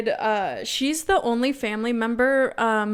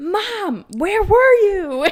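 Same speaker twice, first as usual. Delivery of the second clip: long, carrying, loud, high, drawn-out yell; 9 semitones higher, 6 dB louder than usual. Retelling hearing mom yell over the phone: imitating mom yelling. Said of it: "I could hear my mom yelling".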